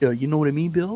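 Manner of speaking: put-on New York City accent. Imitating people from New York City: New York City accent. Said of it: "there's an accent there".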